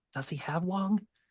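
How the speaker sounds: breath-only, soft, hushed half-whisper. Voicing a shopkeeper leaning in to ask about a sick friend: half-whispering. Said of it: "says in a whisper".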